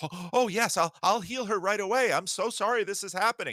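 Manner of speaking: fake-nice customer service voice. Acting out a reply to a panicked man with a sick child, customer service rep voice. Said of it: "Sounds like some customer service representative".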